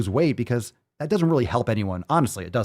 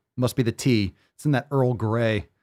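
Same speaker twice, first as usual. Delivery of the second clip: ordinary talk, nothing marked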